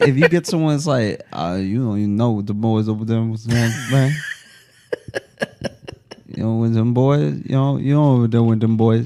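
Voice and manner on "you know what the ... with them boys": put-on drawl, slower, heat-weary. Illustrating someone who talks with some drawl: put-on heat-stroke drawl. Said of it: "When you get somebody with some drawl".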